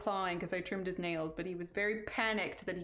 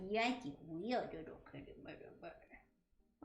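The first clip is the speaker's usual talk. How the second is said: whispered, soft, breathy pet talk; 8 dB quieter than usual. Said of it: "I did not just do cat voice".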